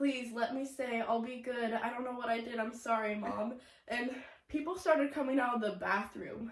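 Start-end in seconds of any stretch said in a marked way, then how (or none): 0.0-3.5 put-on acted tearful childlike voice. Retelling how she begged her mother as a small child: imitating a begging crying child. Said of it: "I was begging her".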